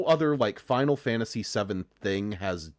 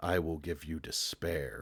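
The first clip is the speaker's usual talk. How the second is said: low pitch, kept dead flat and level; 6 semitones lower, 10 dB quieter than usual. Describing a game's opening scene, quoting its villain: monotone Sephiroth voice. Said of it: "doing his monotone".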